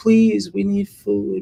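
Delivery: put-on tiny, high little child's voice. Imitating the caller's granddaughter heard in the background, in a tiny little voice. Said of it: "this little tiny little voice saying".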